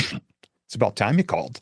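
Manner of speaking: mock classic sarcastic voice. Retelling the first words a woman said on the phone in twenty-one years, mimicking her sarcastic tone. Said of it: "in her classic sarcastic voice".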